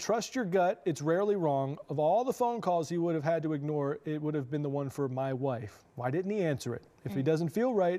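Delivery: ordinary talk, nothing marked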